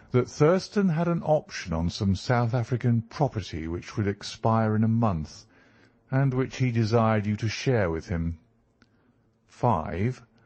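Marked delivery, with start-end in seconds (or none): none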